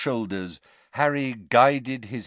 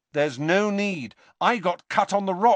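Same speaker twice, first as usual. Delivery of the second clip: firm, decided, slightly high voice; 8 semitones higher than usual. Speaker declining the knife offered by the man he calls sir: firm. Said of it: "said Harry firmly".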